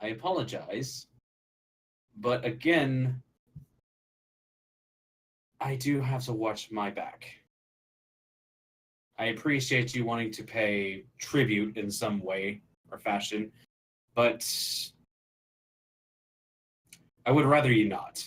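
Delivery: speaking low, hushed. A character walks someone toward the back and speaks, lowered voice. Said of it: "lowers his voice".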